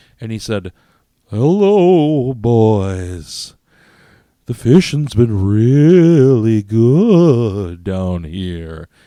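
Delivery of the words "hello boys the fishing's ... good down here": eerie ghostly voice, loud, very slow, drawn out. Retelling what a man said before their fishing trip, imitating a ghostly voice. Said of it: "He sounded like a ghost".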